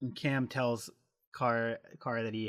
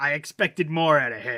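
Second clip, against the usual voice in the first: put-on loud, let-down Boston accent; 4 semitones higher, 10 dB louder than usual. Quoting CT's reaction to Kara backing out of her vote plan, in his Boston accent. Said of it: "in his Boston accent".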